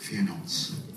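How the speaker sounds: low, soft, breathy whisper. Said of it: "He whispers in your ear".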